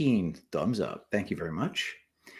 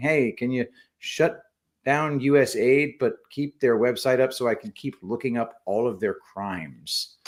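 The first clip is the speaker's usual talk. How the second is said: ordinary talk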